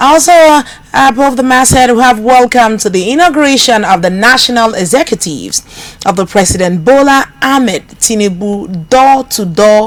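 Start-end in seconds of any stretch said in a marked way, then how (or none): none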